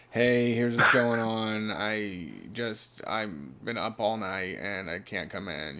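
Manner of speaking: very slow, soft, low-energy creaky half-voice. Showing how to say you can't come in: low-energy creaky voice. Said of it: "Just a little low energy, not a full voice ... I'm starting to do a creaky voice".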